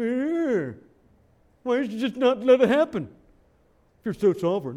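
put-on bratty teenage tone. Addressing listeners about questioning God, mocking a 17-year-old kid's attitude. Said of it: "We kind of say it like a 17-year-old kid".

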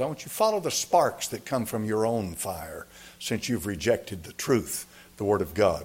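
plain

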